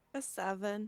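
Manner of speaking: very soft, quiet, downcast and sad. Answering what score was gotten, sounding sad. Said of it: "Why do you sound sad?".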